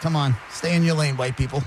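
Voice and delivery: plain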